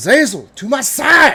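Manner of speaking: booming, drawn-out, very high, very loud super southern shout. Summoning a dragon in character with raised hands: shouted summoning call in a country accent. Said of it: "I will shout".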